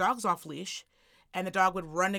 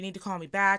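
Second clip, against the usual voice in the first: mock-panicked, imitated panicky voice. Retelling a man's phone call, imitating the full panic in his voice. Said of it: "just full panic in his voice".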